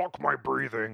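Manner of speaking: over-the-top, deep, rough, rasping possessed voice. Imitating Kirstie Alley giving birth: deep exorcist voice. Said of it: "like her deep".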